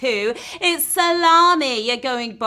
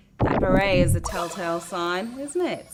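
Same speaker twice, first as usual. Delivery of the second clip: ordinary talk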